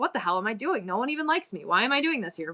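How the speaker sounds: put-on, mock-discouraged voice. Speaker recalling how they felt after their second show, imitating own discouraged self. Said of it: "I was super discouraged".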